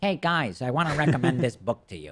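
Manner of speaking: on-air recommending voice. Replaying a caller's impression of him, mimicking his own book-recommending voice. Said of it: "is that my voice when I recommend books".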